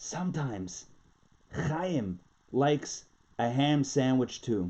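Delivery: hushed, confiding, low and slow half-whisper. Telling a joke, the man leans in to the border official: half-whispering. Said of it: "he whispers".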